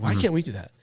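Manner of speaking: put-on angry ranting tone. Retelling complaining while watching the game: imitating own angry complaint. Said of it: "angrily saying it to Jessica".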